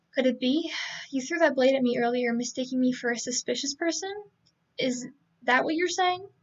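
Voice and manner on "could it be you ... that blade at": usual speaking voice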